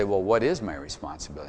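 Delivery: ordinary delivery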